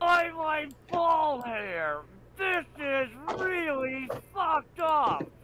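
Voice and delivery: loud, slow yell, full of shock.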